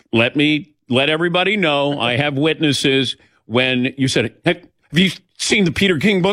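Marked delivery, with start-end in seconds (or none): 4.4-6.3 high, rushed, panicked and nervous voice. Retelling how the other speaker asked about the book: imitating a panicked question. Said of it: "I did not say it in a panicked voice".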